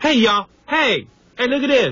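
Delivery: very high put-on voice, pushed way up. Doing an impression for the others on air: Eddie Murphy impression. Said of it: "I look like Eddie Murphy and I sound like him".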